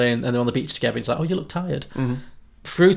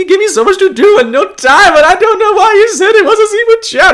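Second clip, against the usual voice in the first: put-on crying voice, higher and louder; 13 dB louder than usual. Retelling a film scene, quoting Agador Spartacus: imitating Agador Spartacus crying. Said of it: "Agador Spartacus is, like, crying".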